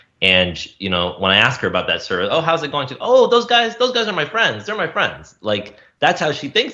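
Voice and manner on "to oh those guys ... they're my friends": very high, thick, sing-song put-on Indian accent. Describing their mom's view of a service, the speaker quotes her: imitating thick Indian accent. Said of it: "She has a pretty thick Indian accent".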